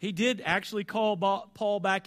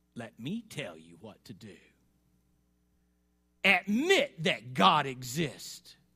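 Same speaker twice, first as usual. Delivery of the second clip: rough, gravelly, very deep, very low voice; 7 semitones lower than usual. Telling a story, an old archdemon stands up before the silent demons: gravelly voice. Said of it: "in his gravelly voice".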